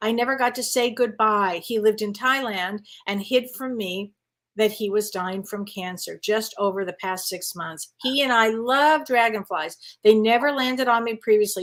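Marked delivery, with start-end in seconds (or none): none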